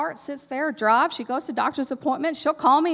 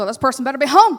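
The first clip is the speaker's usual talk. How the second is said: put-on angry grumbling, louder; 8 dB louder than usual. Retelling going door to door when nobody answered, retelling grumbling anger. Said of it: "Now I'm ugly".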